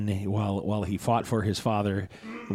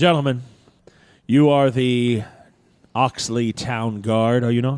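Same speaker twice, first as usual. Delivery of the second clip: loud, raised voice projected to carry far; 3 semitones higher, 7 dB louder than usual. As Prince Valdor addressing the Oxley Town Guard, in a loud voice. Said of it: "addresses you in a relatively loud voice, but not. He's not yelling".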